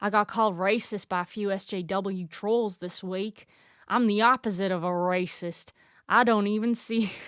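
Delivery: put-on rural Southern US accent. Reading a YouTuber's caption aloud, the speaker slips into a redneck accent. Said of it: "Why am I turning into a redneck accent?".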